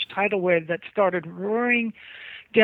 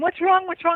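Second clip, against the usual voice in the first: acted-out, high, shrieked and repeated scream; 10 semitones higher, 3 dB louder than usual. Recounting running from a huge wave as the dad shouted, retelling own screaming. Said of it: "And I'm screaming".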